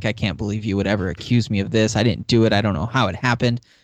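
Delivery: mock righteous indignation. Retelling Nina's denial after being accused: imitating righteous indignation. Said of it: "that whole righteous indignation thing".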